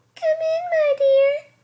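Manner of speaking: very high, loud, squeaky put-on granny voice. Reading the story, the wolf in Granny's bed calls out in a squeaky voice. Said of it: "calls the wolf in a squeaky voice".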